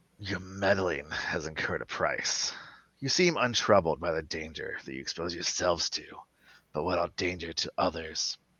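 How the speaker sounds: low, dropped-down, rasping voice. A narrator voices someone calling out through a speaker to the players; low, raspy voice. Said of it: "in a low, kind of raspy kind of tone".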